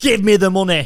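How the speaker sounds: forceful, insistent voice.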